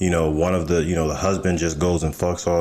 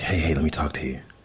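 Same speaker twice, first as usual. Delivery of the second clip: put-on whispering; 4 dB quieter than usual. Retelling a guy at the gym approaching: imitating someone whispering. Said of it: "what are you whispering for?".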